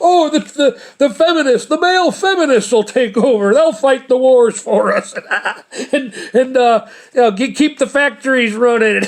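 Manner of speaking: words breaking into laughter. Repeating the joke about male feminists: laughing while talking. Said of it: "Give me a second to get my composure back".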